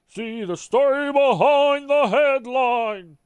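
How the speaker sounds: high, cartoon-style TV promo announcer voice. Reading a headline tagline aloud, Futurama voice. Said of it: "I do like the Futurama voice for those".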